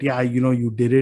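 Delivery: ordinary talk, nothing marked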